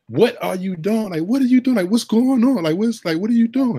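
put-on very high, frantic, disbelieving screaming. Recalling leaping from bed when JR got the rebound, re-enacting screaming at the TV. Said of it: "I'm screaming at the TV".

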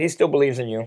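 ordinary talk, nothing marked

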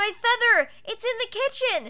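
shrill, very high, loud shriek. Alfred, resisting Arthur's pull during a fire, screaming over the roar of flames. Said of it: "he screamed over the roar of the flames".

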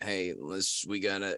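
subdued, slow delivery. Showing the others a subdued Ray Liotta voice. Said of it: "a subdued Ray Liotta voice".

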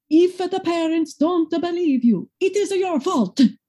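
put-on very high pitch with thick, heavy Italian accent. Retell a woman's answer to a group question about convincing parents, imitating a very thick Italian accent. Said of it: "in this very thick, wonderful Italian accent".

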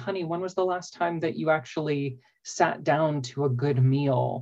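ordinary delivery

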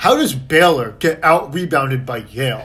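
put-on, extremely condescending, thoroughly patronizing tone. Speaker retells a reporter questioning the Baylor team, imitating a condescending tone. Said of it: "In like the most condescending tone imaginable".

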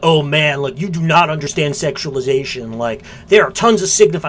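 casual, laid-back dude-bro voice.

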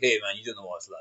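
put-on low, soft voice of a fifty-year-old man.

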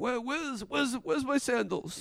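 put-on high elderly voice.

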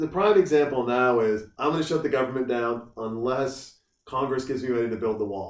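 ordinary delivery

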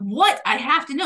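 ordinary delivery

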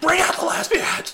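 loud, very high-pitched screaming. Telling a story, the speaker recalls turning around and screaming, retelling a scream. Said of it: "I turn around and start screaming".

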